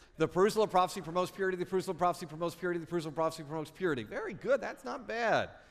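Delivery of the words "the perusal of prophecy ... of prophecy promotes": very fast speech, higher and louder. Leading the group in a tongue twister, saying it three times fast. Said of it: "again, again".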